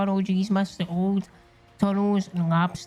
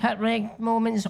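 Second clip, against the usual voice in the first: usual speaking voice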